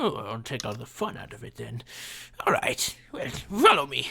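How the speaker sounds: ragged, swooping gnomish man character voice. Voicing a gnomish man leading the party away: voicing a gnomish man. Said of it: "there's this gnomish man in ragged purple robes".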